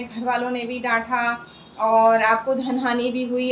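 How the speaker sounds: ordinary talk, nothing marked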